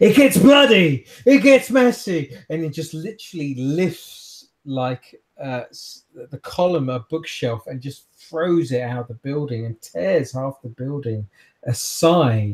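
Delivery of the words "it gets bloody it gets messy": shrill, very high, very loud screaming outburst. Narrating a character who suddenly gets up and screams out, screaming. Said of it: "just screams out".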